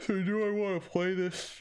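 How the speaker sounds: very high voice, talking through a yawn. Thinking aloud about a market trade late in the evening; yawning while speaking. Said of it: "Sorry, I'm yawning".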